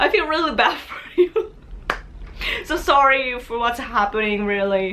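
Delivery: chuckling, talking through laughter on every word. Speaker addresses a listener, laughing while talking. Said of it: "I'm laughing because it's so ridiculous".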